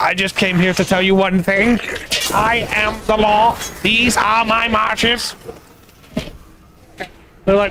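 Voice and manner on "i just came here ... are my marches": mock-angry put-on robot voice, higher. Telling a story where a heron answers what it wants, angry robot voice. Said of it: "Why did the heron sound like an angry robot?".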